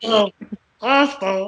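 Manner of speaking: crooked creature voice. Describing the old hormone monster, the speaker performs a crooked hormone monster voice. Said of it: "the same voice that I do for Jar Jar Binks is very similar to the hormone monsters".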